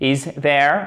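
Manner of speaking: pitch rises at the end on "there". Teaching question intonation in French and English: rise on 'there'. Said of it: "on remonte sur la fin de la question l'intonation".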